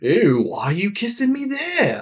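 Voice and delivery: put-on failed Scottish accent, very high, swooping, sing-song. Speaker quoting a character from episode nine, bad attempted Scottish accent. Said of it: "I don't know what accent that was. It definitely wasn't Scottish".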